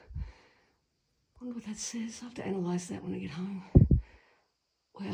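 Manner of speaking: hushed, quietly moved, emotional half-whisper. Visiting an old church with your husband, half-whispering. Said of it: "sorry I'm whispering".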